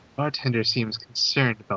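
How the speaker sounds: very quiet, quick, barely voiced hushed aside. Speaking in character during a role-play scene, very quietly. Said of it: "I also say very quietly".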